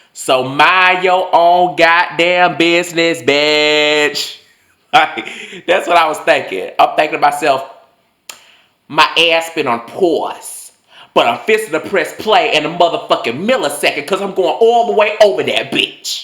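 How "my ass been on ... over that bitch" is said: put-on New York accent, higher pitch. Recalling what the speaker was thinking back then, in a put-on New York accent. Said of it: "in my New York voice".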